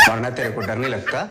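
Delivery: low, soft, laughing, jeering tone.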